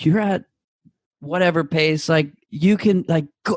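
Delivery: high-pitched, shouted rallying encouragement. Retelling a spectator shouting at mile twenty-five: imitating a spectator shouting. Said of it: "someone started shouting".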